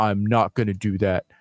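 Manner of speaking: low, mocking put-on voice.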